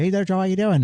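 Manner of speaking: squeaky, very high, loud voice. Retelling how a neighbor always greets him: imitating a neighbor. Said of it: "they hear me doing that impression".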